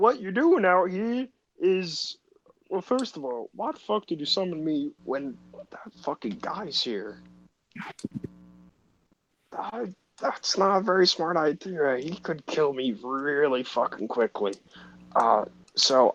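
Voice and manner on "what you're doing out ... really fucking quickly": higher-pitched creature voice. Voicing a summoned being who scolds the player for summoning it: voicing the summoned being. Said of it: "I'm gonna be the voice now".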